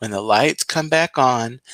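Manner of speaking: plain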